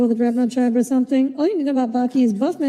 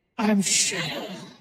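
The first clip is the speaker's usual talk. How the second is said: breathy, whispered superhero voice; 4 semitones lower, 7 dB quieter than usual. Imitating meme videos where people dub him with a Batman voice. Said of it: "giving him like a Batman voice".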